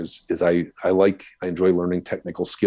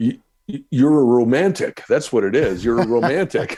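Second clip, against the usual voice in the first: put-on French accent, pitched up, stuttered start; 6 semitones higher, 4 dB louder than usual. Retelling what an interview guest from Quebec said: imitating Billy Ryu's French accent. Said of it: "with his French accent".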